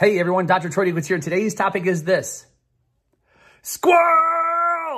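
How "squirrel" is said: very high, hoarse, throat-scraping, straining shout. Announcing the day's topic as a joke: straining shout. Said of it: "that was hard on the vocal cords".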